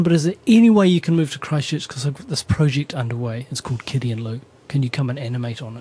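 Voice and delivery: ordinary talk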